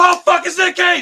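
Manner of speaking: put-on loud shout. In a movie theater, recalling seeing Nick Cage appear on screen: retelling a really loud shout. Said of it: "really loud".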